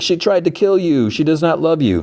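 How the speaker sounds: put-on sobbing voice. Retelling a character's warning about the bride: imitating Bogdana sobbing.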